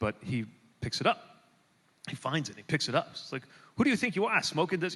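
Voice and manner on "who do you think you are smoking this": grumpy, grouchy cop voice, pitched up. Retelling what a police officer said on finding it: imitating a grouchy cop. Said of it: "kinda, um, grouchy cop".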